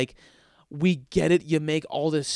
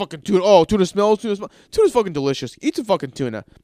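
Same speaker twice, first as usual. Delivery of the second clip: loud, mock mushed speech through a full mouth; 4 semitones higher, 6 dB louder than usual. Imitating a guy in a video eating tuna: imitating talking with mouth full. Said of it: "puts it in his mouth with a full mouth. He goes".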